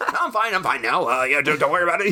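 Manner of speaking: high-pitched, panicked, hurried-sounding voice. Retelling a character's excuse after being caught: imitating a panicked lie. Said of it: "He's just a panicked lie".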